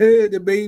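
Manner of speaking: mock crying while talking. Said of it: "I'd have been crying like".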